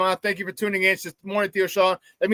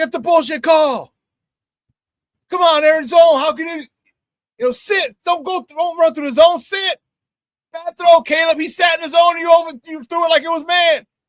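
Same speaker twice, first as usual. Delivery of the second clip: put-on, loud, high-pitched sports-fan hollering; 9 semitones higher, 5 dB louder than usual. Retelling yelling at the TV screen in a bar: imitating own yelling. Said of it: "But I'm yelling at him".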